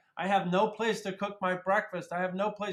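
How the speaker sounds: mild, half-shouted ranting yell. Retelling a man seen yelling on Main Street: imitating a man yelling. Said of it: "yelling and screaming about the fact".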